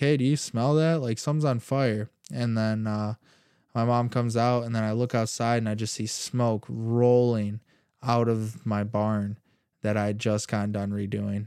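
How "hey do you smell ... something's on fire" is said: acted-out calling out, yelled. Retelling calling for parents after smelling something burning: retelling a yell. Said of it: "yelling for my mom and dad".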